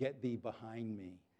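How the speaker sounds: very quiet, low half-whisper under the breath. Retelling their reply when told a brownie was saved: very quiet half-whisper. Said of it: "I just whispered very quietly".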